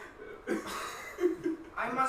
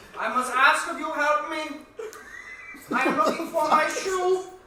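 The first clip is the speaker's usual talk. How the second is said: put-on very loud, high, decrepit old man voice, belted out; 6 semitones higher, 9 dB louder than usual. Voicing an old man asking the group for his shoe: Larry, old decrepit man. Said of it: "He's old and decrepit".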